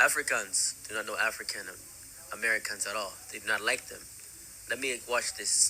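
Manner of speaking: ordinary talk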